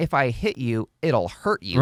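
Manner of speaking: ordinary talk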